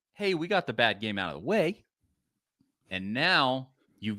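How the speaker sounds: usual speaking voice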